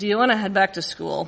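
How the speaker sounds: very nonchalant, low and relaxed tone.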